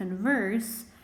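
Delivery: converse stressed on second syllable, VERSE. Showing learners the verb meaning to talk: stress on VERSE in converse. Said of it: "with the emphasis in the ers".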